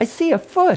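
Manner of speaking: put-on very high, thrilled, excited child's shout. Narrator voicing a daughter at the shark tank, shouting excitedly. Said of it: "his daughter shouted excitedly".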